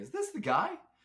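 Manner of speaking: high, loud, excited disbelieving tone. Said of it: "I was like".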